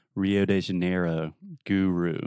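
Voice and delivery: mock exaggerated American accent with stretched vowels. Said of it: "just really exaggerate all of your vowel sounds".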